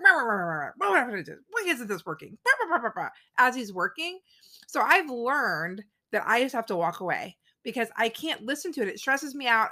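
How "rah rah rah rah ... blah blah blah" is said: put-on stressed-out, frustrated ranting, upset grumbling. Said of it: "makes it sound like he's upset".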